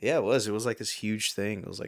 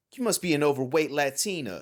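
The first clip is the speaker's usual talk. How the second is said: high, loud, mocking and taunting game announcer voice; 6 semitones higher, 5 dB louder than usual. Imitating the dance game announcer taunting a player who misses beats: imitating the DDR announcer taunting. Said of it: "He'd start taunting you".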